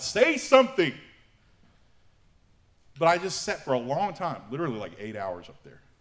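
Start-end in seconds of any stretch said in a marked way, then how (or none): 0.0-0.9 loud, very high, angry upward shout. Retelling yelling at God on a mountaintop: imitating his own yell. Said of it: "just yelling for God".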